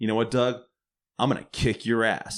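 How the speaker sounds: plain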